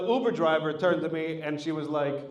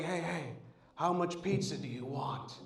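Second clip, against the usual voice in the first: very quiet, hushed, slow, wary paranoid mutter; 11 dB quieter than usual. Retelling a childhood memory of talking to some paranoid guy, imitating the paranoid guy. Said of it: "some paranoid guy who's like".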